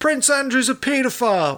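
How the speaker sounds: put-on, very high-pitched bellowing shout. Recounting what someone yelled at the new king's proclamation, retelling a bellowed shout. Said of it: "someone bellowed".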